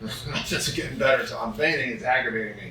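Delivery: ordinary delivery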